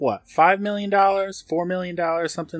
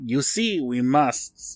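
put-on over-the-top French accent, spoken very slowly; 5 semitones lower than usual. Quoting a scientist meant to sound german, in a full french accent. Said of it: "That's not a German accent. I went full French there".

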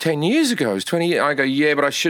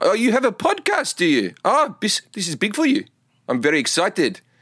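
put-on South African accent, pitched up and patronizing; 5 semitones higher than usual. Showing another speaker what the South African accent sounds like: put-on South African accent. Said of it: "Everything's like, everything's, like, complimentary and patronizing".

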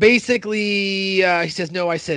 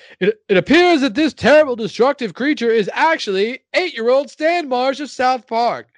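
pitched-up TV newscaster report delivery; 6 semitones higher, 3 dB louder than usual. Retelling a South Park scene, speaker voices the newscaster, news anchor voice. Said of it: "The news goes".

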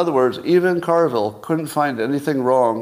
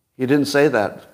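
normal talking voice

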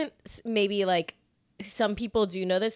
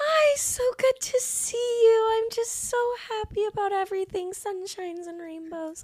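very high-pitched, gushing, smiley put-on voice; 12 semitones higher than usual. Asked by her for your best impression of her, imitate her as high-pitched and smiley. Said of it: "so high-pitched and smiley".

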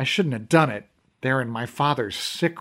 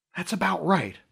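discreet, hushed, higher-pitched voice; 5 semitones higher, 5 dB quieter than usual. The narrator answers a question, hoping Brendan will keep quiet too; as quietly as possible. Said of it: "I said as quietly as I could".

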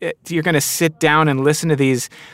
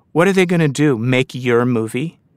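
cruel, menacing, vicious, sinister voice; 2 semitones lower than usual. Acting out the voice in their head while writing for screen, imitating a vicious, sinister voice. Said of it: "this very vicious, sinister voice".

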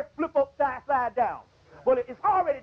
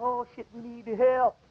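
needy, begging, pleading cry. Imitating the gods asking for help: imitating the gods begging for help. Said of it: "they're begging for help".

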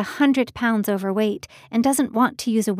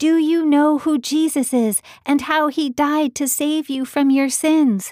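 acted, loud shout pitched high; 5 semitones higher than usual. Retelling shouting a question into a hard-of-hearing man's ear: imitating own shouting. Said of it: "I was literally shouting".

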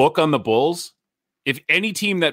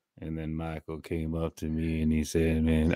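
very low, slow vocal-fry drawl, deep and drawn out; 9 semitones lower, 9 dB quieter than usual. Imitating how a basketball player talked: Scottie Pippen impression, deep slow voice. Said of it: "every time Scottie Pippen talked, he was like".

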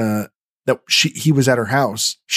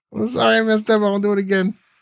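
very high, goofy, dumb alien voice; 10 semitones higher than usual. Recapping a TV episode, speaking as an alien in a dumb alien voice. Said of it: "Dumb alien voice".

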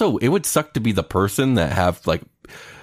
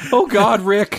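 very high-pitched cartoon-style exclamation; 13 semitones higher, 4 dB louder than usual. Joking along in a conversation about a cartoon: Morty voice. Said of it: "you sounded like Morty right there".

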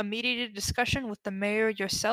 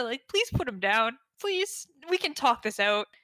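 pleading, begging tone; 2 semitones higher than usual. Asking Dumisa to put the gnome down: pleading. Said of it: "persuasion check Dumisa?".

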